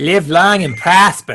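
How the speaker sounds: loud, bad, terrible put-on Boston accent. Two native Texans quoting an actor, in a terrible Boston accent. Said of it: "do our terrible Boston accents".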